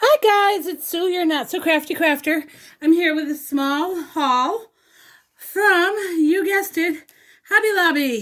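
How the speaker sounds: out of breath, winded, high and slowed. Greeting viewers of a craft haul video after rushing upstairs: out of breath. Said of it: "Sorry I'm winded, I just flew up the stairs".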